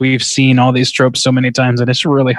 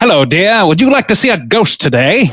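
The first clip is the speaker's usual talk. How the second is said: put-on old Hollywood transatlantic accent, pitched up; 6 semitones higher than usual.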